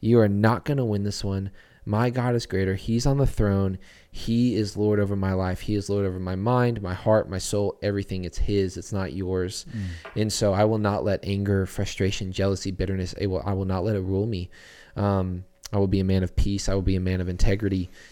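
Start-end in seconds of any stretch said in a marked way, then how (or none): none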